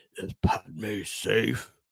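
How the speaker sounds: poor imitation of deep villain voice, very low, soft. Quoting a film line he loves, speaker attempts a terrible Darth Vader impression. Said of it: "That's a terrible impression".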